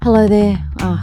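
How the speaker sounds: calm, relaxed voice. Greeting listeners at the start, calm, relaxed voice. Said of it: "can you hear the calm, relaxedness of my voice".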